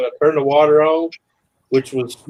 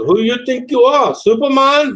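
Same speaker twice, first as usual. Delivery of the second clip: put-on heavy German accent, higher; 10 semitones higher, 4 dB louder than usual. Retelling what the surgeon said in recovery: imitating a heavy German accent. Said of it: "a German guy, real heavy accent".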